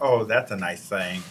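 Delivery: ordinary talk, nothing marked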